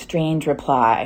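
ordinary delivery

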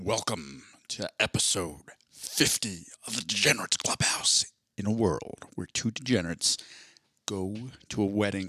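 movie trailer announcer voice. Podcast host opening episode 50, in a movie announcer voice. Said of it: "I was trying to do movie announcer voice".

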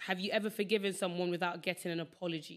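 normal talking voice

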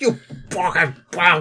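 yelling out in pain, furious scream. Voicing a man hit in the thigh, grabbing it: screaming in character. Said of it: "he screams".

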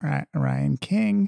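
put-on nasal voice. Doing an impression of the absent co-host saying his own name: Ryan King impression, nasal. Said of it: "Let me do an impression".

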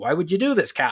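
baffled pirate voice. Retelling how the other pirates question their captain: imitating baffled pirates.

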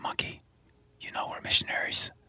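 soft, hushed, pleading whisper. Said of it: "I turned to Monkey and I whispered".

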